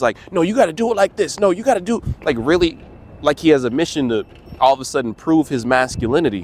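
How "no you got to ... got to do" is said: high-pitched, fast, rattled-off berating. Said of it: "he starts berating the woman".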